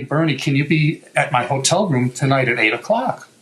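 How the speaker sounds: usual speaking voice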